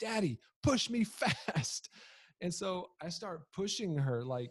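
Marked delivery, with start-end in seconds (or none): 0.0-1.9 play-acted high, drawn-out, top-of-the-lungs scream. Father retells his daughter yelling to him at the roller derby start, imitating daughter screaming. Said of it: "she screams at the top of her lungs".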